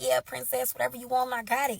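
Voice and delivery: plain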